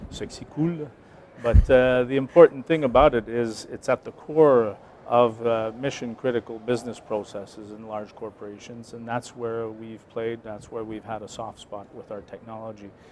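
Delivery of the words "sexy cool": mock French accent, much higher. Quoting how the r and d leader says it at trade shows, in a french accent. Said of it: "That's what he calls it with a French accent as well".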